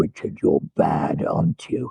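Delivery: menacing, very low, creaky, raspy sinister voice. Retelling what a man said at a debrief, imitating his sinister voice. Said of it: "with that kind of sinister voice".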